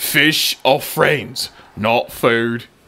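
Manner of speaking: put-on Australian accent. Speaker insists on doing the accent when playing Bruce; Bruce's Australian accent. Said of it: "you gotta do it in the accent. Oh yes, if you're gonna be Bruce".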